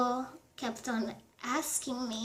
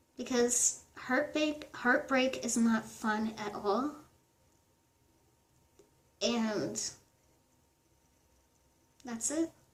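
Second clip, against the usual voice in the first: fighting back tears, voice near crying. Finishing a heartbreak story video for viewers while holding back tears. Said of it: "I'm honestly holding back so many tears right now".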